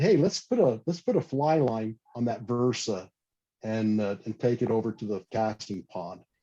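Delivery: ordinary delivery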